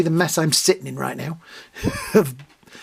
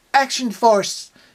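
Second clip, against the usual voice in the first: odd English-tinged fake American accent; 7 semitones higher than usual. Recalling how the characters said it in the local version: weird English trying American accent. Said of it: "in a really weird English, trying to be American accent".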